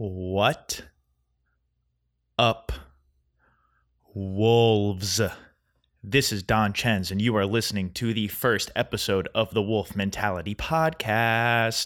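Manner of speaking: slow, deliberate, carefully spaced-out words. Podcast host opening the first episode of his show, saying it slow. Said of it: "I said it slow that time".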